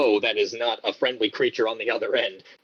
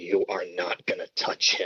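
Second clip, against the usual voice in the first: hushed whisper breathed close at the ear; 4 semitones lower, 4 dB quieter than usual. Describing a voice heard in the ear: Homer whispering in ear. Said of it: "almost sounds like he's whispering in my ear".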